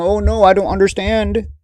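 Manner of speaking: put-on whiny, fake crying voice. Mocking imagined complainers who cry for news: mock crying whine. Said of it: "Nobody was crying and going".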